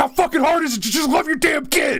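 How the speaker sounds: put-on very high, wild, shrill, freaked-out scream. Retelling how a buddy freaked out on another guy, imitating someone screaming. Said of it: "he just started screaming".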